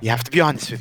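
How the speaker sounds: hushed half-whisper in a character voice. Playing a character pulling a friend aside to talk: half-whispering in character. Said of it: "He's gonna whisper".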